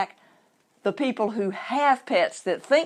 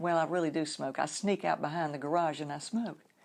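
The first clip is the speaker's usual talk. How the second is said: very quiet, soft, hushed voice; 5 semitones lower, 9 dB quieter than usual. Retelling a pet owner's admission about smoking: imitating someone speaking quietly. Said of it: "She very quietly said".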